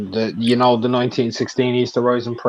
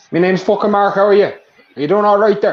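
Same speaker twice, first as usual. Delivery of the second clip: put-on Irish accent, pitched up; 9 semitones higher, 4 dB louder than usual. Retelling meeting a man who walked in, the speaker switches accents: Irish traveller accent. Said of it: "I put on the traveller accent that I have".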